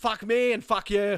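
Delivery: put-on Irish-accented slow drawl. Imitating the Irish Siri: Irish Siri voice. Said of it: "Have you heard the Irish Siri?".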